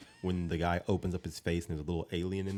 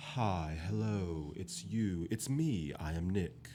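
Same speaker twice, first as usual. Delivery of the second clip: put-on alien voice trying to sound human, quieter; 5 dB quieter than usual. Retelling how Nick walked up stiffly, like an alien trying to act human: imitating Nick as alien acting human. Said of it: "there's an alien just trying his best".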